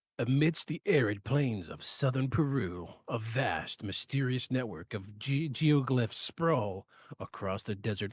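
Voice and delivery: deep, dramatic movie trailer voiceover delivery. Switching from complaining about the tablet to narrating: movie voiceover voice. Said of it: "in movie, my voiceover voice".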